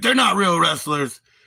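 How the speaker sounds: put-on mad, annoyed, pissed-off huff. Retelling how he would get pissed, imitating his mock-angry rant. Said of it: "And then he would be like pissed".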